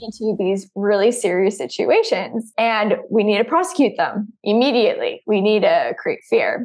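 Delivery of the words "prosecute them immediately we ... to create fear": ordinary talk, nothing marked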